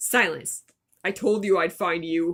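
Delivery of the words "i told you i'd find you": put-on man's voice, much lower pitch. Reading a story aloud, voicing a man's line, in a man's voice. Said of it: "That's supposed to be a man voice".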